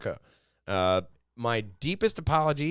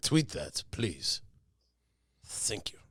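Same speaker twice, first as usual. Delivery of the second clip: whispered, breathy, stern, angry samurai voice; 6 semitones lower, 7 dB quieter than usual. Joking about a Nintendo announcement on Twitter: speaking like an angry samurai. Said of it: "Why are you speaking like Angry Samurai?".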